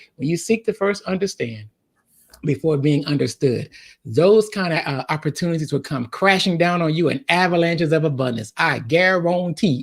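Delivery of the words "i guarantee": playfully laid-on put-on Louisiana accent. Making a guarantee in his self-described Louisiana voice, Louisiana accent. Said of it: "in my Louisiana voice".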